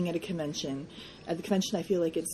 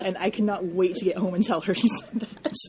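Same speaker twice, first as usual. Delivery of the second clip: ordinary talk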